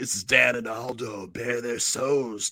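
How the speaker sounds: stretched-out, stoned-sounding voice.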